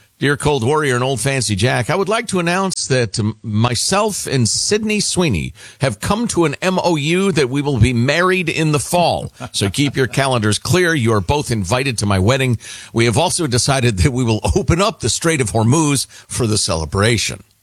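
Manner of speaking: plain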